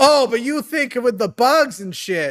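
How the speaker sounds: put-on north central American accent. Imitating a caller who kept interrupting, in a north central accent. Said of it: "I'm giving him more of a north, central north accent".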